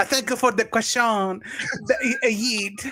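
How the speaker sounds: fake French-accented speech. Retelling how a man answered a French questioner, in a put-on French accent. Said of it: "he slips into a French accent".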